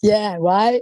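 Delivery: ordinary delivery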